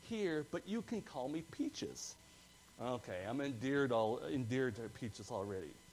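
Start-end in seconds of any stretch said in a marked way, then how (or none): 0.1-2.1 put-on tiny, squeaky, high little girl voice. Retelling a kid's answer when called on in class, imitating Haley's squeaky little voice. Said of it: "She replied in her squeaky little voice".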